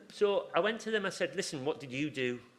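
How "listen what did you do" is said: plain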